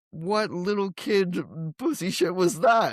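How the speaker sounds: mock outraged, disbelieving, high, drawn-out rant. Retelling leaving the theater after the movie: imitating own past outrage. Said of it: "I left that movie theater going".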